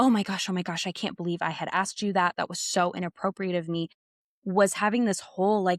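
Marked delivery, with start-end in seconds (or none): 0.0-3.9 mock panicked, flustered voice. Retelling what a teacher said the next day: imitating someone panicking. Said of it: "he was panicking".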